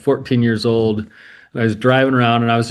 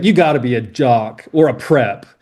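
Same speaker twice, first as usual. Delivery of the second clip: mock disdainful, scornful tone; 2 semitones higher than usual. Retelling what a man told him about jocks and preps, with mock disdain. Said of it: "he says it with like this like disdain".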